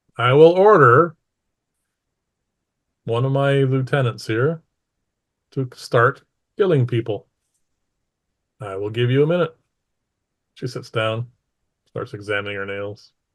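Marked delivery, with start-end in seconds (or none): 0.2-9.6 brusque, short, clipped, curt delivery. Narrating a scene, voicing her reply to people hiding from her: short, curt. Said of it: "she says, shortly".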